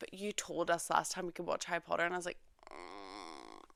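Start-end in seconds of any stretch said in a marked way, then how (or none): none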